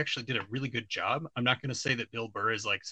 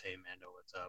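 put-on flat, monotone delivery; 5 semitones lower, 17 dB quieter than usual. Criticizing an overly quippy character by imitating him: flat monotone voice. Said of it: "he's talking in a very monotone voice like this".

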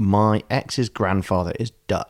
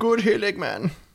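much higher-pitched silly Dutch accent. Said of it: "say it in a silly accent".

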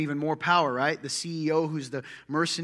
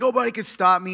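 put-on scream, higher and louder; 4 semitones higher, 6 dB louder than usual. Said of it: "screaming like".

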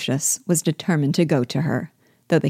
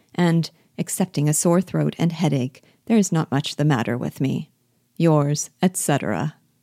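usual speaking voice

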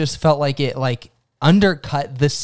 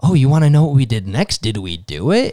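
put-on voice of an elderly woman; 2 semitones lower than usual. Describing a movie scene that feels cheesy: imitating an old lady. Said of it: "to have this old lady, like".

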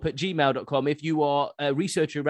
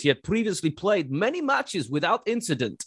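put-on Russian accent; 4 semitones higher than usual. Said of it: "i'll do it in a russian voice".

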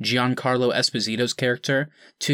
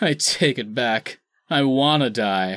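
put-on groaning hero voice, slower. Recounting an awkward film line, doing a groaning Superman impression. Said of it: "Superman groaning and going".

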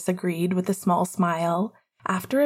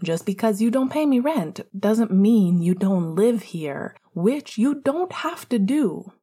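plain reading voice

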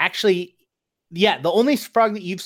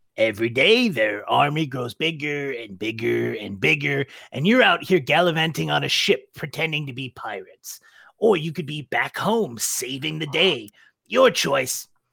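throat-straining character voice, lower; 4 semitones lower than usual. In a tabletop game, a character challenges another character's choices, throat-straining character voice. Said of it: "[name]'s voice is really rough on my throat".

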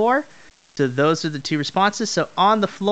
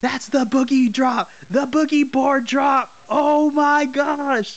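high, screaming and yelling ringside commentator voice; 8 semitones higher than usual. Describing a wrestling move, imitating commentators screaming and yelling. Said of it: "The commentators are just screaming and yelling".

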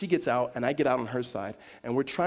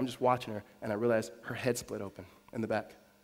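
normal talking voice

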